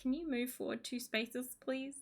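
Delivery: soft, shy, timid voice. Retelling how Ruby asks a chess pawn to move: timid Ruby voice. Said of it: "she's so, like, timid about it".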